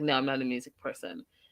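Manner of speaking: acted bone-dry deadpan, low and soft. Retelling how a man answered a woman's question, imitating a deadpan reply. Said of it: "he does it like deadpan like that".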